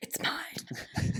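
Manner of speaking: breathy, whispered, grasping cave-creature voice. Retelling how a character claims a case: Gollum-y voice. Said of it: "in a very Gollum-y kind of way".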